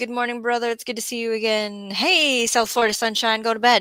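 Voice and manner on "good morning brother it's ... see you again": plain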